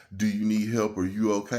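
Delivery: ordinary delivery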